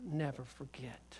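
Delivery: slow, soft whisper.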